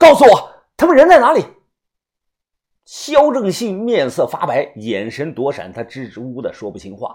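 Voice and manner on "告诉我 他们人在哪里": very loud, high, shrill, rushed, out-of-control shouting. The narrator slams the table and confronts a man: shouting. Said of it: "红着眼睛大喊".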